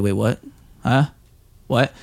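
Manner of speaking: put-on bewildered, confused, puzzled tone. Retelling how the dishwasher reacted to requests: imitating Matt confused. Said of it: "He was kinda just, like, more confused".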